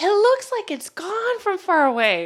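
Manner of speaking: high-pitched, loud, excited voice. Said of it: "He's like".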